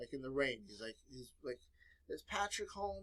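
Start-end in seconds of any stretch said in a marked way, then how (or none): 2.1-3.0 tearful, high-pitched, weepy crying voice. Telling a story of a visitor at the door, imitating someone crying. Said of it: "and he's crying".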